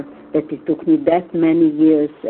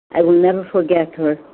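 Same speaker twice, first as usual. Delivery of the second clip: ordinary talk, nothing marked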